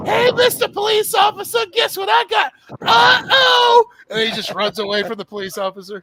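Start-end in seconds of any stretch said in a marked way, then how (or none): 0.1-3.9 squeaky, high, loud cartoon character voice. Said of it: "Doctor Roxer just got high".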